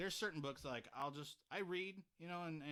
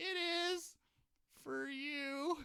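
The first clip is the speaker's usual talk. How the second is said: mock very high, heartbroken cartoon mouse voice, very sad; 13 semitones higher, 6 dB louder than usual. Retelling a Mickey video from YouTube, imitating Mickey's saddest voice. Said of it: "in the saddest voice ever".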